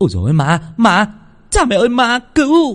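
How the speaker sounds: high, loud, terrified panicked shriek. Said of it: "hốt hoảng quơ bùa loạn xạ".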